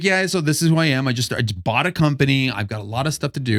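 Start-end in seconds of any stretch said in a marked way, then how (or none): none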